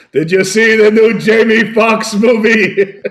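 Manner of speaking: high, very loud blurted-out yell. Retelling how a dad in a live show audience yelled: imitating someone yelling out. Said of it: "your dad yells out".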